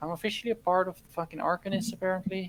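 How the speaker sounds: very quiet, hushed voice. Confiding to Maris so only the table can hear, speaking very quietly. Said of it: "I say this very quietly".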